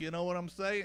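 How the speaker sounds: high-pitched New York accent.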